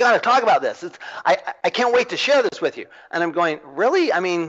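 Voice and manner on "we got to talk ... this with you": mock-excited voice, much higher pitch. Retelling a developer calling you up, imitating him all excited. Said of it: "he's all excited".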